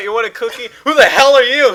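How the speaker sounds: high-pitched, loud, angry yelling.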